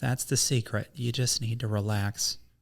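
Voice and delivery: motherly, mother-figure voice. Retelling what a friend's mom said on vacation: imitating a friend's mom. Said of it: "She sound like that?".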